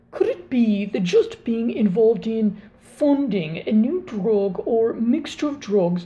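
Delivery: bad, terrible put-on British accent. Trying out a practiced accent while posing a question, terrible british accent. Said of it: "Let me try a British accent".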